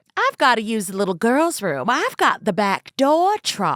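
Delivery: put-on Southern belle accent. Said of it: "Doesn't it just sound better with the".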